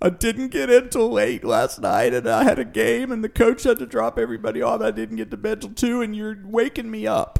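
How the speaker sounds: mock sobbing, very high, wailing teen crying yell. Imagining a teenage kid on the lawn yelling at the sun, mock yelling while crying. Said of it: "yelling at the sun, crying".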